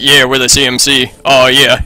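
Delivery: mock low, masculine voice. Joking about how the CMC will sound when they finally talk: CMC deep manly voice. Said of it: "they're gonna have deep, manly voices".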